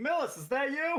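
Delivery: very high, loud yell in a character voice. Opening a door in the game and calling out: yelling in character. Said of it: "I'm gonna yell out".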